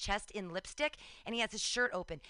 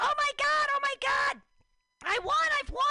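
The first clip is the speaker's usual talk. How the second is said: very loud, ecstatic, over-the-moon screaming; 8 dB louder than usual. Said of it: "I'm screaming".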